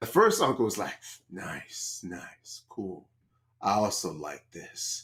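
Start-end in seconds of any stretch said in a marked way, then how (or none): 1.3-5.0 creepy, very slow whisper, drawn way out. Acting out a creepy uncle answering an older uncle: creepy uncle voice. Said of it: "I don't know if that was creepy enough".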